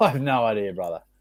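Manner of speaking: ordinary talk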